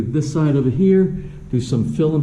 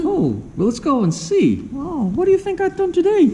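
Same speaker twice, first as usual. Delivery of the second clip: very high squeak with big swooping pitch changes. Speaker answering what got done inside the house today: Mickey Mouse voice. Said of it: "that's my Hapon Mickey Mouse voice".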